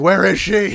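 mild yell, pushed out, demanding tone.

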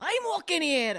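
bad, fake Scottish accent, loud and high. Taking a turn in an accent game with a movie quote, bad Scottish accent. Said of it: "Scottish accent?".

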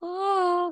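high, awed, cooing cartoon sloth voice. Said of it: "those little cartoon slothy things with the big eyes".

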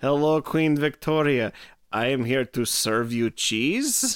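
vampire character voice. Acting out Dracula meeting Queen Victoria: Dracula voice. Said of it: "New choice".

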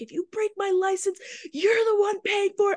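full-on, high, shrill yelling. Telling how they yelled at a dude bending their license, retelling a yell. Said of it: "So I'm yelling at the dude".

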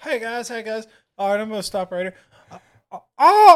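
very high, loud flustered stammer, losing composure. Acting out a politician falling off a bike, as asked: imitating Joe Biden falling off bike. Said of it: "give us the sound effect of when Biden was in mid-fall".

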